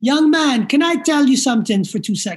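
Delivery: clumsy, shaky, bad attempt at a Jamaican accent. Retelling what a man said to them, speaker puts on a bad Jamaican accent. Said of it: "my Jamaican accent sucks, so I'm going to try my best".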